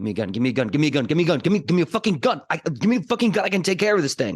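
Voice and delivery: frantic, rushed, mounting manic panic. Voicing a character in panic, demanding a gun: panicked, building mania. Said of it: "in that panic, I just start kind of slowly building with my mania".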